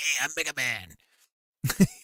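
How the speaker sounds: very slow, drawn-out chain-smoker voice. Describing how Mega Man sounded, in a Mega Man as chain-smoker voice. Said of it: "fifty year old like s- chain smoker guy".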